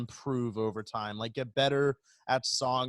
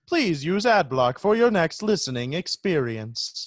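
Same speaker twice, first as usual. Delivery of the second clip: robotic voice-assistant delivery; 5 semitones higher, 7 dB louder than usual. Urged by another speaker, someone repeats the closing line in the Siri voice. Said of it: "talk in like the Siri voice".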